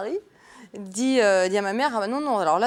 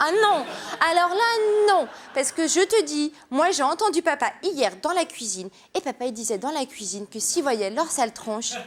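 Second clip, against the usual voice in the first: put-on high, childish, chattering small child voice; 5 semitones higher than usual. Retelling what she said to her mother as a child: imitating her childhood voice. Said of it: "comment je faisais ?".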